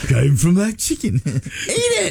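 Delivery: wavering, sing-song, rustic English peasant accent. Imagining peasants in a field, the speaker voices them in a Monty Python peasant voice. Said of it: "wavering on an English accent".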